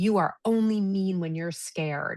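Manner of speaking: accusing outburst, yelled but held in. Retelling what her daughter yelled at her one day: imitating her daughter yelling. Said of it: "she yelled at me one day".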